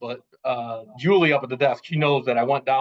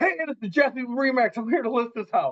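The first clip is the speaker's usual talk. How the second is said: acted-out announcing holler, loud, pitched way up; 11 semitones higher than usual. Retelling walking into an open house to scare people out: retelling a loud yell. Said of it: "I'm yelling real loud".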